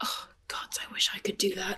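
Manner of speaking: mumbled under the breath. In a game, a character reacts to another's magic trick; muttered under his breath. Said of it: "Dagon says under his breath".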